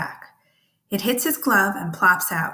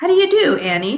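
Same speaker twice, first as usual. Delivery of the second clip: most charming tone, raised and pitched up; 7 semitones higher, 6 dB louder than usual. Reading a story aloud, greeting a girl: most charming voice. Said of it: "I say in the most charming voice".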